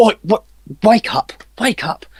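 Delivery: very high-pitched calling voice. Voicing a guard who slaps a sleeping guard awake: guard waking a sleeper. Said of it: "and they're like".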